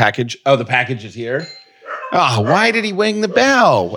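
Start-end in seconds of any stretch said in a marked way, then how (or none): 2.4-4.0 very high, swooping voice. Asking why the delivery person rang the bell: Elmer Fudd voice. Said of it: "why did I say that like Elmer Fudd?".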